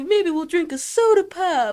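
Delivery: put-on shrill, old-fashioned voice. Imitating Jade mocking Tori as sounding like a 1940s person: mocking 1940s-person voice. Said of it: "make her sound like a nineteen forties".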